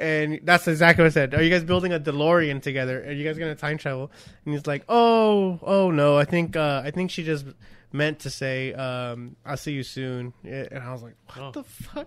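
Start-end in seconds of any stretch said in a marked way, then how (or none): none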